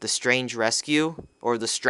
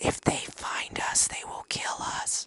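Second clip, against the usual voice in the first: whispered, barely voiced, hushed, urgent. Acting out talking in a hushed tone, hushed tone. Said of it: "talking in a hushed tone".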